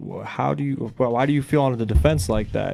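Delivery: ordinary delivery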